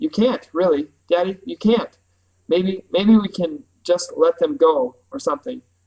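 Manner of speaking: ordinary delivery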